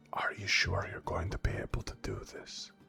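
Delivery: very hushed, barely voiced whisper. Narrating a character who crouches and pulls a companion down, whispering. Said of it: "And he whispers".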